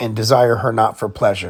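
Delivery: ordinary talk, nothing marked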